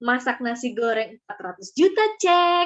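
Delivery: loud, shocking, startling, attention-grabbing delivery.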